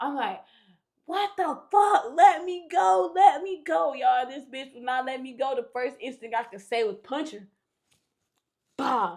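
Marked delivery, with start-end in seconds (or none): 1.1-3.9 very loud, drawn-out panicked scream. Retelling being bitten by a woman who would not let go, retelling panicked screaming. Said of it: "I'm screaming".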